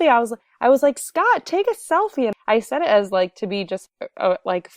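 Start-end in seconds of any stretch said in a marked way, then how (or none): 1.0-2.3 mock playful jokey yell, very high. Retelling teasing a man to take a selfie: imitating a joking shout. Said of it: "funny person and jokingly".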